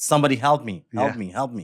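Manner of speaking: plain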